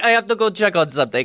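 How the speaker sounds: poor put-on French accent. Speaker retells what a woman said to them, bad French accent. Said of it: "This is my French accent".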